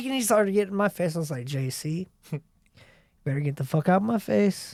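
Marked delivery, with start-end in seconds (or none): 1.5-4.7 composed, level, calm, even acted voice. Retelling telling an angry man to get out of his face: imitating own calm threat. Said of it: "And this is how calmly I was".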